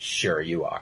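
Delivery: very quiet, hushed, under the breath, barely a murmur. Retelling a cartoon scene in an impressions outro: imitating Bruce. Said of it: "And Bruce is just like".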